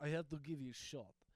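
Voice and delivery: ordinary talk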